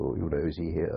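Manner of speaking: ordinary delivery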